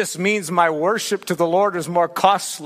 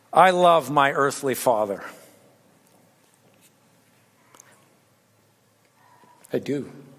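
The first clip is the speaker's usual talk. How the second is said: tearful, crying speech through tears; 4 semitones lower than usual. Speaking on loving one's enemies, the speaker turns to their earthly father, crying while speaking. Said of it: "I didn't mean to cry there".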